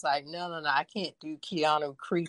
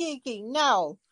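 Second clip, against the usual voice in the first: mock yell, much higher; 8 semitones higher, 3 dB louder than usual. Recalling watching Kiki on screen, retelling yelling at the screen. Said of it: "I was yelling at the screen like".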